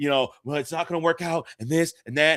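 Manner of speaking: mock-frantic, acted panicked voice. Telling a story, acting out how his wife sounded on the phone, imitating frantic speech. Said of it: "she was being frantic".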